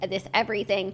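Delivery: ordinary delivery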